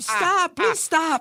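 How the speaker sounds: put-on very high-pitched little-girl scream. Retelling how the bandit screamed on camera, imitating a girlish scream. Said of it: "Here comes the bandit screaming like a little girl".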